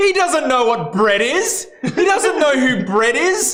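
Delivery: very high, loud words giggled through laughter. Retelling what a woman said about the sommelier, acting out laughing while talking. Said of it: "bursts out laughing".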